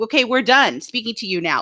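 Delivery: plain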